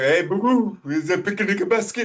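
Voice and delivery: loud, high, goofy cartoon bear voice. After greeting the Unity of Davis family, do your Yogi Bear voice. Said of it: "I should do my Yogi Bear".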